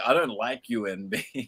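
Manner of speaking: put-on dismissive voice, slow, drawn-out and pointed. Retelling how Del Strain said he didn't like someone: imitating Del Strain's delivery. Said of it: "it was the way he said it, like".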